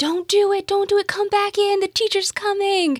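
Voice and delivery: shrill, very high, very loud shrieking scream. Retelling a classroom prank, the speaker acts out the class: retelling screaming. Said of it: "we just started screaming".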